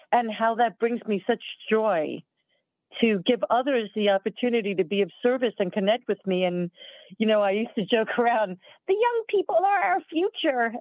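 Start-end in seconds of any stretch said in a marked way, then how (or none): 8.9-10.7 put-on very high-pitched little old lady voice. Recalling a joke the speaker used to make, in a little old lady voice. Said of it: "in the little old lady voice".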